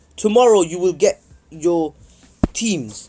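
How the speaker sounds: normal talking voice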